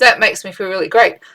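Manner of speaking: usual speaking voice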